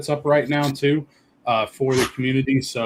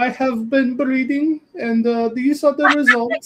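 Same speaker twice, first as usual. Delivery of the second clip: put-on Indian accent, very high; 13 semitones higher, 4 dB louder than usual. Voicing a game character who hands over bred pals, with a put-on Indian accent. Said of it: "you making my guy sound Indian?".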